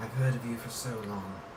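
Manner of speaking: creepy, soft, purring villain voice.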